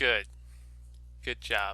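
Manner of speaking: mocking, ironic tone. Responding to another speaker's choice to steal the purse: sarcastic praise. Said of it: "I was just sarcastically praising you".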